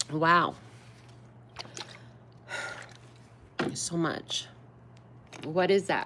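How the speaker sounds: voice choking up. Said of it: "Why am I choking now?".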